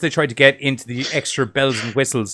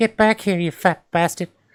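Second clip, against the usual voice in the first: put-on creepy old man voice, high; 6 semitones higher than usual. Showing what the other impression really sounded like: creepy old guy from Family Guy. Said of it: "That was creepy old guy".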